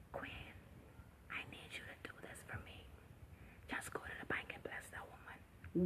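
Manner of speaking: still, quiet whispered voice. A speaker acts out God speaking to a listener, in a soft whisper. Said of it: "Whisper, a still soft voice".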